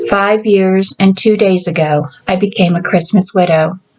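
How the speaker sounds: plain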